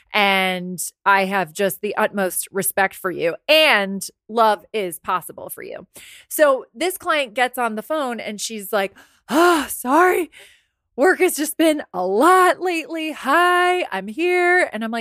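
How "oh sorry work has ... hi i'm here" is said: overwhelmed, pitched-up, slow voice. Retelling a client's first words on the phone: imitating an overwhelmed client. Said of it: "It just sounded like she was very overwhelmed".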